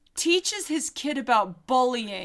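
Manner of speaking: normal talking voice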